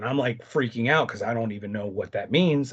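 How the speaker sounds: usual speaking voice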